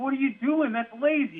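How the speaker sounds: play-acted, shrill, very high erupting scream. Retelling erupting at a player while in his office, re-enacting screaming at him. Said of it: "just screaming at him like".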